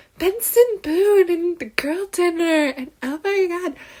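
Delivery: high, slow, drawn-out giddy gushing fangirl voice. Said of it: "today I feel like I'm just like".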